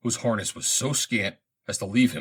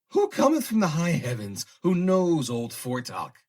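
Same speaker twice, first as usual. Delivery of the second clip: put-on cackling old-man voice in high falsetto; 8 semitones higher than usual. The old man Fortuck greets the arriving Nur-An, cackling in a high falsetto. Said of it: "cackled the old man in a high falsetto".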